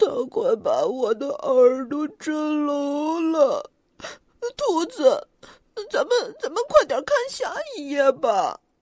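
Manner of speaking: quivering, shivering, trembling voice. Xiaopang, speaking to the rabbit about the bear: trembling. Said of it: "小胖打着哆嗦说".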